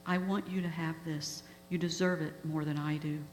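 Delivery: ordinary delivery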